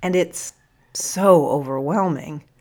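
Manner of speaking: ordinary delivery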